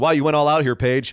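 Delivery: ordinary talk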